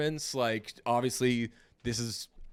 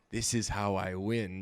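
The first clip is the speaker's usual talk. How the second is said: slow, drawn-out, classic signature-style voice; 3 semitones lower than usual. Describing how the line sounds in memory: classic Howard voice. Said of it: "just like the classic Howard voice".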